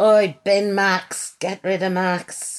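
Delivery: put-on Scouse accent. Recalling what the public shouted at him, speaker does a Scouse accent. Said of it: "they didn't all have Scouse accents".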